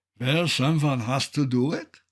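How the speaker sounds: put-on Swiss German accent. Retelling what Eckhart answered upside down on a mountain top, imitating Eckhart's Swiss German accent. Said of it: "in his lovely Swiss German accent".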